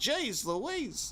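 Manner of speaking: high-pitched mock New York accent, imitated. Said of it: "The fucking New York accent".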